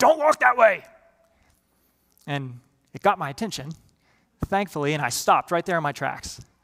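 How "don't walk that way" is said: gruff, rough, loud, high bellowed shout. Recalling a supervisor yelling out across the work site: retelling a gruff, loud yell. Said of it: "in a very gruff and loud voice".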